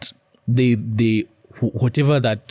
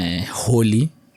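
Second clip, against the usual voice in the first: ordinary delivery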